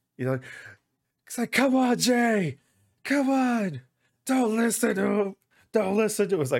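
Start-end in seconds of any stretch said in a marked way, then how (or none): 1.5-6.4 shrill, very high, loud top-of-the-lungs yelling. Retelling how the camera switched sides and showed him shouting at Jay, imitating Greg Miller yelling. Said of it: "just yelling at the top of his lungs".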